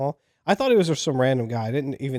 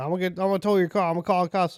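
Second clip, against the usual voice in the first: furious man, angry and pitched-up; 6 semitones higher than usual. Retelling what an angry man said in a parking lot: imitating an angry man. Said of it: "He was incredibly angry".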